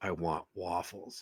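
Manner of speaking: very quiet, low, growly guttural voice. Retelling how she answered a man searching his phone for a place, low guttural growly voice. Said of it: "that voice was like something out of The Exorcist. It was low, it was guttural, it was growly".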